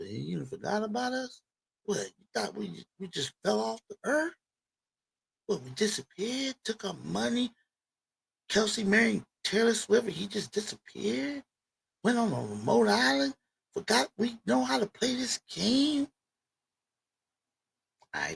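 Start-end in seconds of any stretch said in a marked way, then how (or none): 0.0-16.1 put-on voice, quieter. Voicing the Chiefs' statement after a thirty to seventeen score: voicing the Chiefs team. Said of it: "they saying in that kind of voice".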